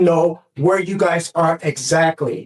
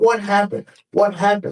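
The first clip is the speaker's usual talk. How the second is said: mock frantic, desperate, panicked delivery; 3 semitones higher than usual. Telling the judge about a phone call about the injured daughter, retelling own panicked words. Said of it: "So I'm panicking".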